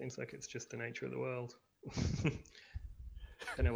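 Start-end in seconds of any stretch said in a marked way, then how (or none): 0.0-1.6 soft, wistful, drifting musing tone. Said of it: "why I sound so wistful about that".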